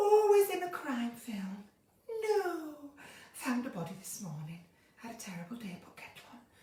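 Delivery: soft breathy northern female voice. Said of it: "Sarah Lancashire, very breathy".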